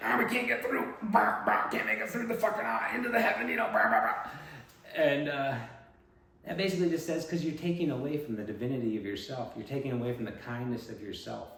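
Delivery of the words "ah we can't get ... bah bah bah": very high, loud, bleating camel voice. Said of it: "And they were like".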